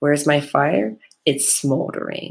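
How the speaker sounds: calm, voiced stage whisper. Retelling a reply to a partner at work: retelling a near half-whisper. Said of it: "purposely said it, like, almost at a whisper".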